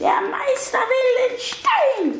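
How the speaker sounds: very high-pitched, croaking monster voice. Narrator reading the insect-boar-vulture-snake answering the old man, in a croaking voice. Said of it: "antwortete mit einer Krächzstimme".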